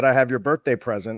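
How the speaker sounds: ordinary talk, nothing marked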